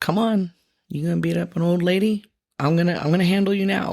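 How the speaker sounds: put-on aggressive yell, half called out. Retelling a confrontation down the road: imitating someone yelling. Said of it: "I just start yelling".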